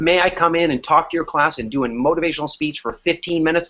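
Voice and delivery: ordinary talk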